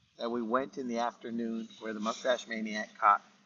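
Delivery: ordinary delivery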